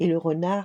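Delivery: ordinary delivery, nothing marked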